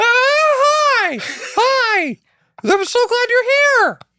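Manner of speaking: very high, squeaky, drawn-out voice. Imitating a character greeting someone, voice jumping three octaves. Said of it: "his voice going up three octaves".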